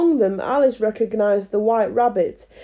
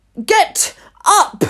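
piercing, shrill, very high, loud shout; 9 semitones higher, 5 dB louder than usual. A narrator reads the Queen ordering the gardeners up, in a shrill, loud voice. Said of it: "said the Queen in a shrill, loud voice".

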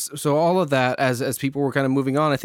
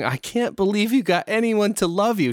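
mocking, breathless, high talk squeezed through laughter; 7 semitones higher than usual. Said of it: "she started laughing at a certain point".

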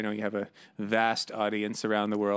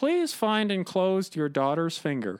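radio host reading voice, pitched higher; 8 semitones higher than usual. Retelling a comedy bit that reads ransom notes aloud: Stuart McLean impression. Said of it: "I can't do it justice, but I'll try".

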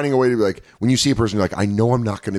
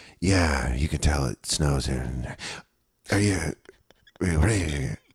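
low-pitched, half-asleep, startled voice; 6 semitones lower, 5 dB quieter than usual. Imitating Todd Barrett talking to a driver: startled, sleepy Todd Barrett impression. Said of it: "Todd Barrett talking to the driver".

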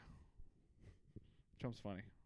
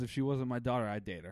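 ordinary talk

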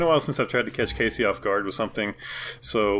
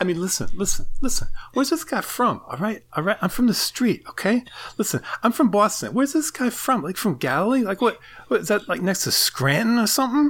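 very high-pitched comic put-on voice; 11 semitones higher than usual. Doing a ten-second impression for the other speaker: Mark Wahlberg impression. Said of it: "this is Mark Wahlberg talking about fighting Jesus".

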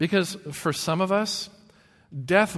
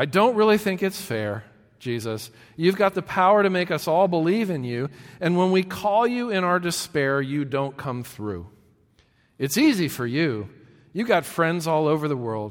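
ordinary talk

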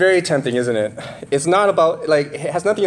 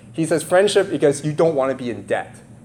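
plain

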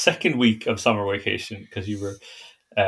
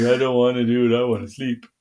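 worn-out, flat, tired, whining reluctance; 3 semitones higher, 4 dB louder than usual. Speaker teasing the listener for always being too tired, imitating Mina's tired whine. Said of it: "That's my impression of you".

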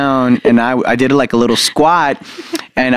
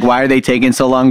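ordinary delivery

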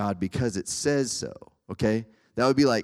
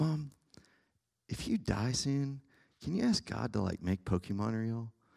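dead-serious, hushed tone; 8 dB quieter than usual. Telling a story, speaker quotes a friend asking his mom, imitating a dead-serious friend. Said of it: "like dead serious".

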